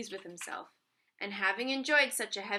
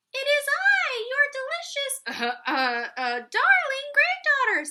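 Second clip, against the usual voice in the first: very high, loud, swooping put-on young girl voice; 8 dB louder than usual. Narrating the wolf answering Granny through the door, in a high voice. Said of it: "said the wolf in a high voice".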